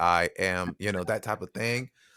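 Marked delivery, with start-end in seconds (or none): 0.0-0.8 robotic, mechanical, machine-like delivery. Recalling a first recorded pass for a robot character: robot voice. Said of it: "very much like a robot".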